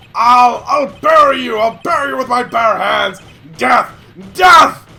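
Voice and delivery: acted character voice breaking down in rage. Voicing a game character's breakdown scene: character breaking down in rage. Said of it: "I love this breakdown".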